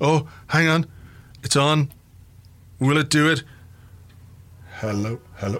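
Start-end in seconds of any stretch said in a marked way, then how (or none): 4.8-5.6 very quiet, low, hushed, hesitant robot voice. Checking whether the device is on during a podcast, in a tentative robot voice. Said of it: "A tentative robot".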